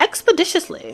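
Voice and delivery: very high, bad, attempted British accent. Repeating a word from a reading, trying it with an attempted British accent. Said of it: "British accent to that".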